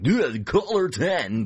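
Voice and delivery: put-on radio announcer voice. Contrasting a curated show with an everyday Top 40 DJ, in a DJ voice. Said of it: "Your DJ voice there".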